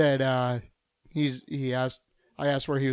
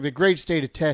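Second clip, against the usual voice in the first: ordinary talk, nothing marked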